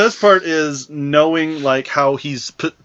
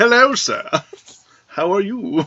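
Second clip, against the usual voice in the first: put-on proper British accent, pitched up; 6 semitones higher than usual. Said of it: "He's a freaking British".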